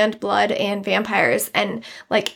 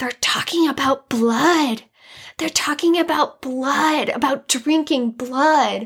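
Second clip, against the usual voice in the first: put-on child whisper, higher; 4 semitones higher than usual. Retelling a little kid during communion, imitating a child whispering. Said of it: "one of the little kids started whispering".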